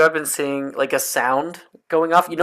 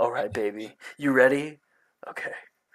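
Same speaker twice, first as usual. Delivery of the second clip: soft, seductive, put-on ASMR-style sexy voice; 3 semitones lower, 7 dB quieter than usual. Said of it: "a super sexy voice".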